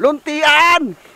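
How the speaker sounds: high-pitched shout.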